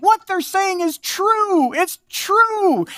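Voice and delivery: put-on high-pitched, chirping, chirpy girl's voice.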